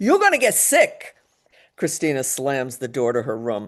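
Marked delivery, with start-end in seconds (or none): 0.0-1.2 very loud, very high, shrill shrieking yell. Reading a story aloud, the mother calls up the stairs: shrieking. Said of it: "Her mother's shriek".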